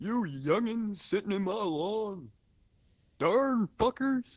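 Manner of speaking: very high, shrill, loud, cranky yelling. Joking on a podcast, imitating a neighbor. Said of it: "I just did an impression".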